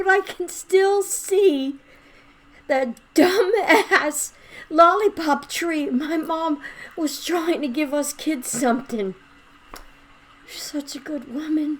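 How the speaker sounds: tearful crying, high, cracking, breaking voice. Speaker talking about their late mother, crying, voice breaking. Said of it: "Sorry, I'm crying".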